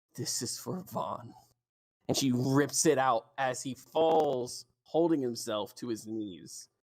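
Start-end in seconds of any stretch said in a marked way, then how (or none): 0.2-1.4 very soft, hushed whisper, close to ear. Voicing a character who stabs a guard: whispering into his ear. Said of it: "you hear her whisper into his ear".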